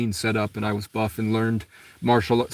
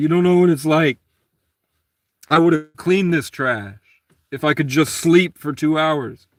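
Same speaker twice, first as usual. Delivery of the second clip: mock, high, loud tearful pleading through crying; 6 semitones higher, 5 dB louder than usual. Retelling pleading with a man who called the cops: retelling own crying plea. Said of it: "I'm crying".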